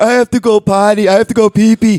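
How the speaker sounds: loud, crude, mocking put-on simple-sounding voice, belted out.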